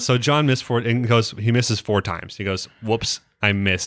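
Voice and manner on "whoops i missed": mock-deadpan, flat delivery. Recapping a show scene, quoting John after he misses: retelling a deadpan line. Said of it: "All deadpan".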